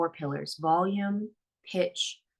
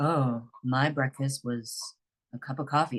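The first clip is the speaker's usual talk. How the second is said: low voice, below usual speaking range; 5 semitones lower than usual. Demonstrating talking lower than they usually speak, lower pitched voice. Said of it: "Lower, like, ... That's quite lower than I usually speak".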